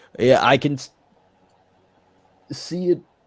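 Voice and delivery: speaking mid-yawn, talking through a yawn. Answering a question about tomorrow's game: yawning while talking. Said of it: "I don't know why I'm yawning".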